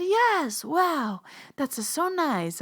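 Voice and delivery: very slow, drawn-out, high-pitched put-on Italian accent. Quoting grandma's reply to the speaker, in a put-on italian accent. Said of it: "I don't know why I just did an Italian accent".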